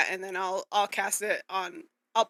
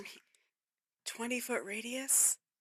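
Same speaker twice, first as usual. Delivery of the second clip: very quiet, hushed whisper; 4 semitones higher, 9 dB quieter than usual. Answering the group about the silence spell's radius, whispering. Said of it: "I don't know why I'm s- whispering".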